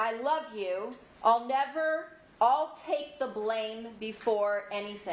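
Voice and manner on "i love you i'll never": plain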